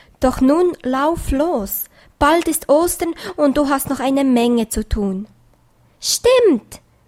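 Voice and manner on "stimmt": excited, eager, very high calling out. Pieps answers the rainbow voice, calling out excitedly. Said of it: "rief Pieps aufgeregt".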